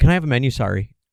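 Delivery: put-on overly apologetic voice. Retelling how another speaker ordered food: imitating an overly apologetic friend. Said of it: "you're like".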